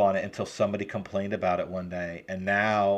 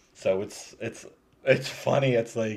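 usual speaking voice

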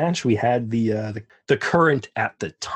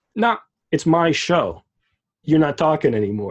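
announcer-like, higher, louder, no-nonsense curt delivery. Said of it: "an announcer that just goes".

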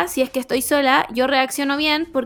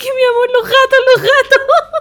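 very high, raised, tearful crying plea; 12 semitones higher, 8 dB louder than usual. Speaker recounts begging her boyfriend at the door, retelling crying pleading. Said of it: "llorando Y le decía a mi pololo".

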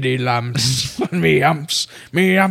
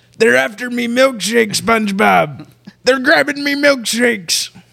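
higher, cartoon sea-captain crab boss voice; 8 semitones higher than usual. Doing silly impressions with friends: Mister Krabs voice. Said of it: "Somehow it's Mister Krabs".

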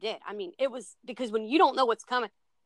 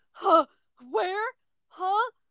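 put-on, very high, freaked-out, startled, panicked voice; 9 semitones higher, 4 dB louder than usual. Retelling slamming into a wall after a scream: imitating own panicked confusion. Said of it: "I literally freaked out".

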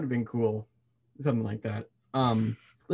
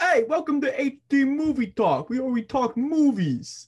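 mild, very high put-on New York accent; 13 semitones higher, 4 dB louder than usual. Podcast co-hosts joke about opening their show in accents, kind of new york accent. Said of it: "You go kind of New York there".

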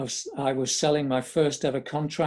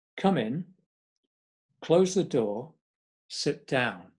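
very stern, firm, no-nonsense put-on voice. Retelling what a man told him when he was called in, retelling very stern words. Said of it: "in very stern form".

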